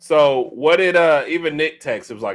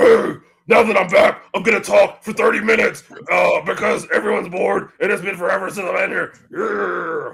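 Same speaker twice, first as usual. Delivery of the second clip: pitched-up pro-wrestling promo voice with a long, stretched "yeah"; 7 semitones higher than usual. Asked by someone for your best, do an Ultimate Warrior impersonation. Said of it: "Give me your best Ultimate Warrior impersonation".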